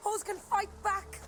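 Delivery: put-on high, angry, defiant tough girl voice.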